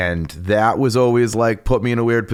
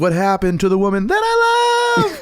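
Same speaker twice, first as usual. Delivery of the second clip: mock yell, pitch jumping super high; 6 semitones higher than usual. Retelling a man's yell overheard in a conversation: imitating a yell jumping high. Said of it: "It got super high in the second part".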